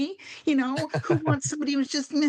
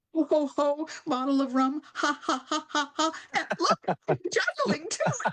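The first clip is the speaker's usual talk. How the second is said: bad, goofy, silly clown voice. Asked for an example, the speaker tries out a clown bit: bad clown voice. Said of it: "that wasn't a very good clown voice".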